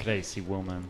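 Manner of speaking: put-on Colombian accent. Teasing someone who says they're so excited, in a Colombian accent. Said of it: "I was saying it in a Colombian accent".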